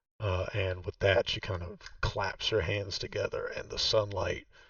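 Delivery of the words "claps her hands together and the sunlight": ordinary talk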